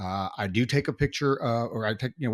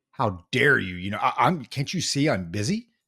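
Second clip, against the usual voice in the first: put-on indignant tone. Retelling how a counter worker answered a request for help, mock-indignant. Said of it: "looked up like indignant".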